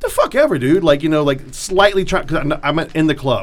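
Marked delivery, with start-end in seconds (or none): 0.0-0.8 high, shrugging, dismissive, holding back anger. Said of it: "I'm trying not to get mad".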